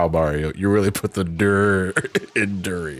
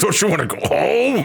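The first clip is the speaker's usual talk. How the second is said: furious, very high, rough angry yell; 12 semitones higher than usual. Playing a game, yelling at the durian like in Happy Gilmore: angry yelling. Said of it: "I'm angrily yelling at the durian".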